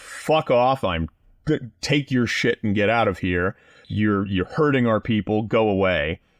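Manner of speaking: normal talking voice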